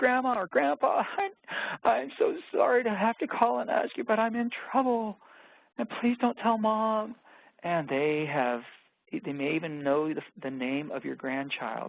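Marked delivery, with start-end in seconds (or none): 0.0-7.2 play-acted frantic, hysterical, very high-pitched voice. Acting out a scam call from a fake grandchild: imitating a hysterical voice. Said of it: "there's a hysterical voice on the other side".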